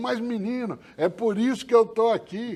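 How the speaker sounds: put-on high-pitched Pernambuco accent. Quoting a prisoner's reply to the speaker's question, in a Pernambuco accent. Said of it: "com aquele sotaque pernambucano".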